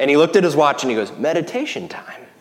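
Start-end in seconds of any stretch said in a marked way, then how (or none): 1.2-2.2 put-on sweet English accent, higher, quieter. Retelling what a man said after looking at his watch, mimicking a sweet English accent. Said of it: "his English accent actually made his voice very sweet".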